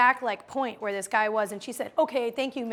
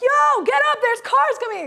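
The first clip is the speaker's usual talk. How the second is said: full-out scream, very loud, high and drawn-out; 13 semitones higher, 8 dB louder than usual. Retelling yelling from the fortieth floor at a man lying in the street, retelling a scream. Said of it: "And I'm screaming".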